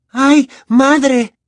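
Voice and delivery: very high, shrill, swooning cry, near fainting. A trembling girl cries out as a giant speaks to her: exclaimed, about to faint. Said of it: "Exclamó Hermione, que parecía a punto de desmayarse".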